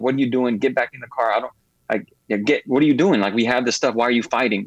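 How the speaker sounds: ordinary talk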